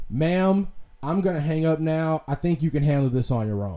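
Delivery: mock-calm, imitated man speaking calmly. Retelling what a man said to a woman cursing at him, imitating a calm voice. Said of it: "he says very calmly".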